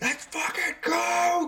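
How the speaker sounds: very high, shrill, furious war scream. Voicing a powered-up gun in battle: furious war scream. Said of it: "screaming something in, like, furious war".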